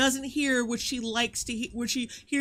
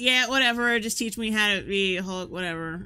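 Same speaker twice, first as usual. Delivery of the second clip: acted dismissive, patronizing, insincere throwaway tone; 3 semitones lower than usual. Retelling how she answered when offered help: imitating a condescending, insincere reply. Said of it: "in the most condescending".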